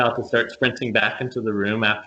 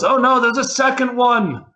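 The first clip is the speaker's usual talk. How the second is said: very high, shrill, loud character-voice shout; 6 dB louder than usual. Voicing a knight who bursts in and yells: yelling in character. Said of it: "who yells".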